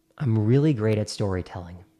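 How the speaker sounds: pitch dropping as breath goes out. Demonstrating how to sound more confident, speaking while exhaling: pitch falling on the exhale. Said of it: "your voice has a tendency to go down in tone".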